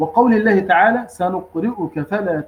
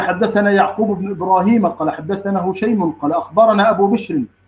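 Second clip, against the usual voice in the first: normal talking voice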